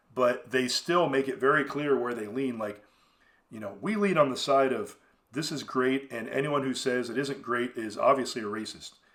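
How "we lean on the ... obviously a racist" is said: ordinary talk, nothing marked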